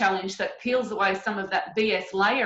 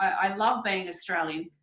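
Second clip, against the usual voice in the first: plain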